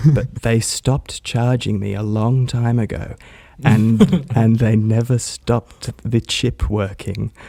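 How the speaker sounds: hushed whisper. Sharing a secret about a gym card so they won't hear, whispering. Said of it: "I have to whisper".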